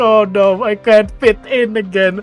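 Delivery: pretend sobbing. Predicting how one girl will react, the speaker acts it out: mock crying. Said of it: "and she starts crying".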